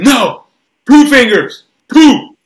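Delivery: shrill, very loud, high, bossy barking voice. Retelling a father's demands at dinner: imitating someone barking orders. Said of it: "my dad barking orders at me".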